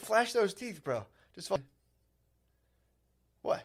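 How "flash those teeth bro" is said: put-on teen voice, higher pitch. Acting out a kid from a family photo: imitating a teenage kid.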